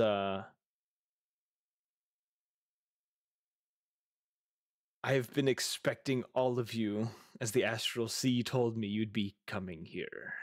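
multi-layered entity voice, stacked in several layers. Narrator voicing an entity heard inside the players' heads, voice with multiple layers. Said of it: "a voice with multiple layers to it".

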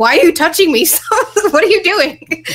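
high, mock alarmed, freaked-out voice. Retelling being grabbed by a group of people, retelling freaking out. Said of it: "And I'm like freaking out".

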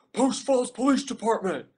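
repeated high, loud yelling.

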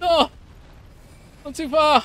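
high, loud scolding shout.

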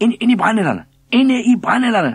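very high, very loud, shrill scream. Narrator voicing the thin one, beating about with a stick mid-chase: screaming. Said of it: "Skreg den tynde".

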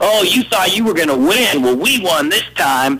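mock, high jeering tone. Retelling how they mocked him in the Border Patrol trailer, imitating mocking taunts. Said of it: "they started mocking me and laughing at me".

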